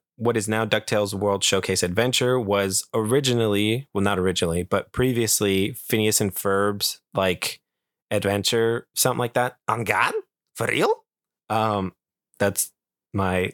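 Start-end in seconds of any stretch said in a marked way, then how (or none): 9.7-10.9 nasal cartoon-villain accent. Speaker tries out an impression while chatting: Doofenshmirtz impression. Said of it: "that's my uh, Doofenshmirtz imperson- impersonation".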